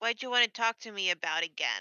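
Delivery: small, cross, angry little voice. Playing a character in a game, answering another player: angry little voice. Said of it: "angry little voice".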